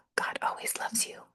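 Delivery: soft whisper under the breath. Signing off with a short postscript line, whispered. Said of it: "I know I whispered that".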